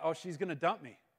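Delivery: ordinary delivery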